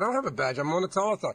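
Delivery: normal talking voice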